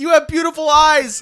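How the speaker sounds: very high, very loud, acted defensive outburst. Retelling a character's line on seeing a giant werewolf: imitating a defensive tone. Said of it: "in a defensive way".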